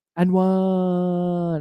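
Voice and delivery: silly dinosaur voice, "one" stretched long. Retelling a silly video, voicing the dinosaur in a funny soft voice. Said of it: "in this really funny soft voice goes".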